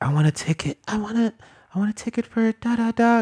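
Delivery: timid, shy, tiny voice, very high. Speaker recalls asking for a movie ticket as a shy kid, imitating a shy little voice. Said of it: "in like my little shy interpreter voice".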